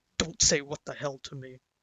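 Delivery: put-on low, menacing, threatening voice. Retelling what the speaker's father said to him, imitating a low threatening voice. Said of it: "like that low threatening voice where he said".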